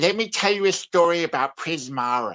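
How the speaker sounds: cliched American nerd voice.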